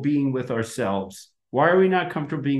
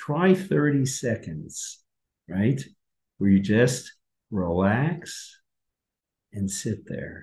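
low, hypnotist-style voice; 6 semitones lower than usual. Guiding listeners through a short relaxation break, use your hypnosis voice. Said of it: "I'm using my hypnosis voice".

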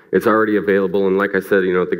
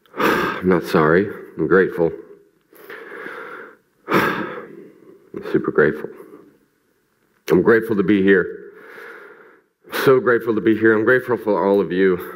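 tearful voice, crying while speaking. Speaking to an audience, really crying right now, crying while speaking. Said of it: "And I'm crying right now".

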